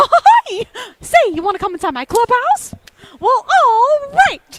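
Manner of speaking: very high-pitched, loud and slow. Retelling how her kid asks her to be Mickey: Mickey Mouse voice. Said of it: "speak to him like Mickey Mouse".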